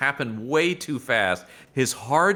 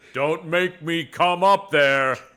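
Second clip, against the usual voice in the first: slow, stern, scolding dad voice; 4 semitones higher, 4 dB louder than usual. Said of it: "we knew he was somebody's dad with this energy".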